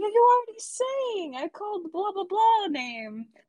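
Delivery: fed-up, angry voice. Acting out a man yelling as the speaker steps on stage, mock exasperated anger. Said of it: "exasperated and angry".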